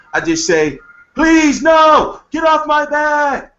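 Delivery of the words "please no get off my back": fake distressed scream, shrill, very high, very slow. Showing what to say when a woman starts yelling: fake distressed scream. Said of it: "you gotta scream real loud, like you're in distress".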